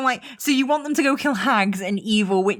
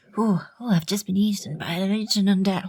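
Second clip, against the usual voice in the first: put-on frail old man voice. Voicing Van Richten, a little old man: little old man Van Richten voice. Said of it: "Van Richten, little old man".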